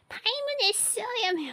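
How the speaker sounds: high, clumsy, fumbling, botched character voice. Trying the voice impression again after laughing: bad Paimon voice impression. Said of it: "I can't do that with the voice impression".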